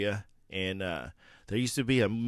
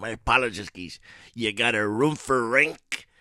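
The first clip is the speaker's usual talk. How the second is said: put-on cartoon sailor voice, louder; 4 dB louder than usual. Doing a cartoon voice for the audience: Popeye voice. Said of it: "that's my Popeye voice".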